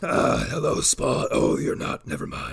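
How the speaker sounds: rough, scraping, creaky character voice. Voicing a creature while riffing on a movie, sounding like Doctor Claw. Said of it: "I don't know why I sound like, um, Doctor Claw".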